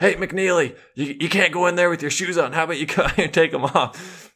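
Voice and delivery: mock high yell. Retelling how the yoga instructor called from outside the room: imitating the instructor yelling. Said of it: "he yells, he's like".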